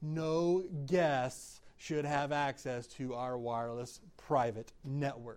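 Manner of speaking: slow, deliberate, each word laid out carefully. Repeating a point to listeners a second time, slow delivery. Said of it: "I'll say this slowly".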